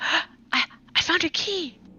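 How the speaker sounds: barely held-in excitement, very high pitch. Describing a game character pocketing a key she found, imitating low excited voice. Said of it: "in a low voice, but you can still hear how excited she is".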